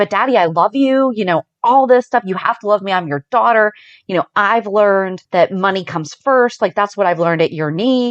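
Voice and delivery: ordinary delivery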